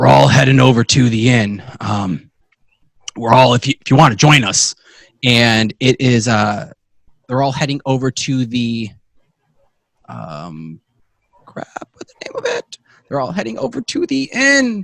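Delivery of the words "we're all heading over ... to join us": rough dwarf voice, louder. Voicing a mourning dwarven family member inviting everyone to the inn: rough dwarven voice. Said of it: "you hear this rough kind of voice go".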